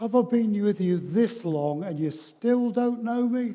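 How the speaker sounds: near-exasperated disbelief. Acting out Jesus answering Philip's request to see the Father: exasperated Jesus voice. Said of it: "almost exasperation in Jesus' voice".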